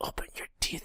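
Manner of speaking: hushed, very quiet whisper. Retelling what she told a woman who didn't know what she was doing: retelling a whisper. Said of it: "and I think I whispered like".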